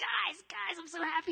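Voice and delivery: high cartoonish voice bursting with excitement. Imitating a preacher who kept repeating his joy: Beavis and Butthead voice. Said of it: "he gets his Beavis and Butthead voice".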